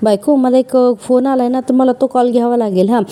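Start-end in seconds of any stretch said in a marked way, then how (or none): none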